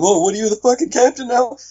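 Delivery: very high-pitched, shrill, shrieking yell. Retelling how one man sat there going off at another, imitating someone screaming at a man. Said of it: "screaming at him".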